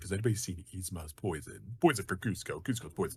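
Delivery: very soft, hushed cartoon henchman voice. Speaker listing voices he can do; Kronk voice. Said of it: "it's also Kronk from uh the Emperor's New Groove".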